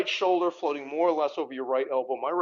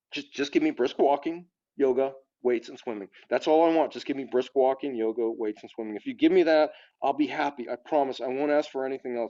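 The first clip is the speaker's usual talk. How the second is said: normal talking voice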